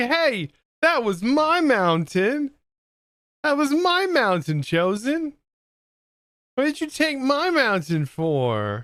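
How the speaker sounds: very high, forlorn, sad donkey voice. Voicing a donkey following along, complaining about its mountain: voicing a sad donkey. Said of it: "He's like".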